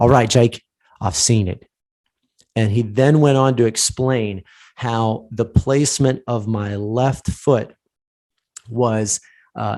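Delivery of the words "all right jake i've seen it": bad put-on English accent. Retelling what an English coach said: imitating an English accent. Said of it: "made up, uh, made up, uh, uh, accent here".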